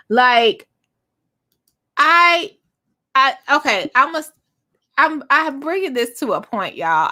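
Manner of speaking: stammering, tripping over words. Talking to viewers about a reality tv finale, stuttering. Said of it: "I know I'm stuttering".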